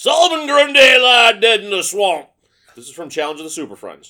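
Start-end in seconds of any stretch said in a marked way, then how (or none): 0.0-2.3 shrill, booming, slow, drawn-out Texas drawl. Repeating an impersonation after being asked to do it again, in a Solomon Grundy voice with a Texas drawl. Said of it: "Kind of that Texas draw".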